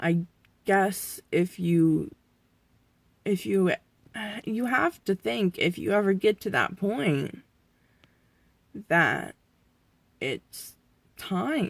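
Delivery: tearful, crying a little. Talking to the camera about possibly reaching the end, crying a little. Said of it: "I am crying a little".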